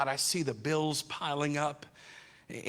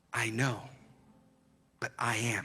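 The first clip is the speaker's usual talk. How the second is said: gentle, low, soft, hushed half-whisper; 5 semitones lower, 4 dB quieter than usual. Speaking as god leaning in to answer, soft half-whisper. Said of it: "God leans in and he whispers".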